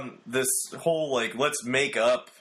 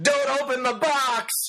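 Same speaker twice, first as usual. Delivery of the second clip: very high, frantic, panicked squeal; 3 dB louder than usual. A podcast host greets his co-host, then does a Robin Williams impression from Jumanji. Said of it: "my best Robin Williams impersonation in Jumanji".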